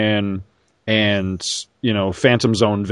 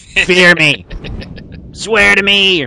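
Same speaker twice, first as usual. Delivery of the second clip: put-on old man voice with Bronx accent; 9 semitones higher, 5 dB louder than usual. Mocking a guy's voice from a movie, in an old man bronx accent. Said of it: "he sounds like he's 80 years old and from, you know, the Bronx".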